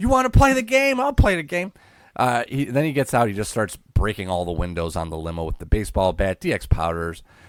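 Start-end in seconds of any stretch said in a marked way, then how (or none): 0.0-1.7 put-on screaming man voice, higher and louder. Retelling a wrestling segment: imitating Vince screaming. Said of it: "Vince just screaming".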